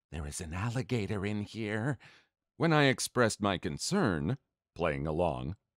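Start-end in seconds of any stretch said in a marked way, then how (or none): 0.1-1.9 wary, careful, hushed half-whisper. Reading a story about a sleep-talking wife waking her husband: hushed, cautious voice. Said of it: "in a hushed, cautious voice".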